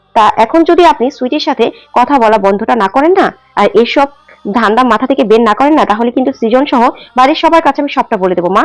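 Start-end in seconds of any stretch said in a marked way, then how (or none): none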